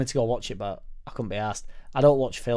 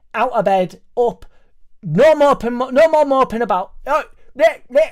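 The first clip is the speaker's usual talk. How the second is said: shrill, very loud, high-pitched nagging; 13 semitones higher, 11 dB louder than usual. Describing the inner voice that pushes them out of bed: my mum's nagging tone. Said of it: "in the tone of my mum".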